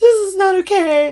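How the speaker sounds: mock drawn-out wail, very high and loud. Retelling realizing how old the dog is: imitating own past crying. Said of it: "all of a sudden, I'm, like, like, crying".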